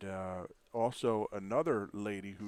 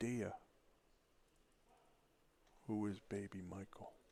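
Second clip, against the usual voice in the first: very softly spoken, much quieter voice; 8 dB quieter than usual. Retelling the moment he asks her about baby michael, very soft voice. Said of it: "just very soft voice".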